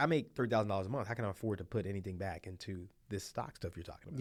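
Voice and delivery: ordinary talk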